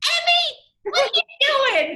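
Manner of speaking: very high motherly voice. Answering a request to show her mother's distinct voice: imitating her mother's voice. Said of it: "I've heard you do impressions of your mom".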